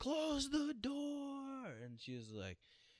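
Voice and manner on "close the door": put-on screeching, very high, loud, drawn-out shout. Retelling how a girl shouted in class as the chef came around, retelling a loud yell. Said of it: "she yelled so loud".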